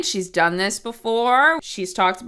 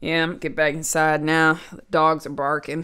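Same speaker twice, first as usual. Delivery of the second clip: bone-dry, flat, very low deadpan; 7 semitones lower, 3 dB quieter than usual. Acting out how people say it, imitating a deadpan tone. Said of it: "they say it in the most, like, deadpan tone ever. Like".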